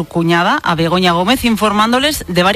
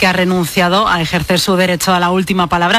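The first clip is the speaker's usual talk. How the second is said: ordinary talk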